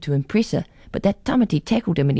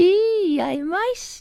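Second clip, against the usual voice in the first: very high, mocking, jeering taunt. Narrating, a girl jeers at a classmate before walking into class. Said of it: "Jeered Carol".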